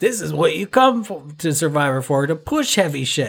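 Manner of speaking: high yelling. Retelling a contestant's line as a Jeff Probst gag: Jeff Probst impression. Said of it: "that was a Jeff Probst gag".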